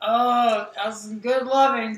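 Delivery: mocking, satisfied, contented put-on voice. Teasing a partner by imitating their voice: mock satisfied-lover voice. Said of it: "That's the voice".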